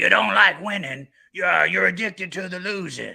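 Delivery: high, dramatic delivery in the style of a movie star. Quoting a line from a gambling movie: Al Pacino impression. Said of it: "That's a pretty good impression".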